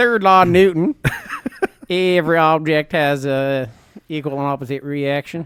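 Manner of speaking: backwoods country voice. Giving Theo Von another run while explaining Newton's third law, Theo Von impression. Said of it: "I was just doing a redneck physicist".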